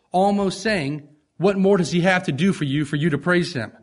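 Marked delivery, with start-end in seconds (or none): none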